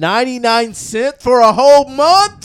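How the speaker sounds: put-on yelling voice. Reacting to a ninety-nine cent monthly price: Blaze voice, yelling. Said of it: "That was my Blaze voice".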